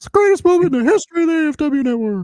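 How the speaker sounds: very high-pitched froggy puppet announcer hype voice. A podcaster repeating a hype line, in a Kermit the Frog-like announcer voice. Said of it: "A cross between um, Shivani and Kermit the Frog".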